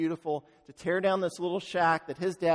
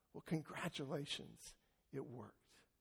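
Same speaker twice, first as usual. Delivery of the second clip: breathy, tearful, whispered voice; 3 semitones lower, 18 dB quieter than usual. Retelling a son's final reply to his father: imitating someone bursting into tears. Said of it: "bursting out with tears".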